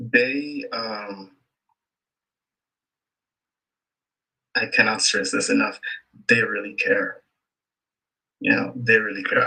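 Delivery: restrained emotion, trying not to show it. A speaker praises how much their school cares for students, holding back emotion. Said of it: "I'm actually trying not to get emotional".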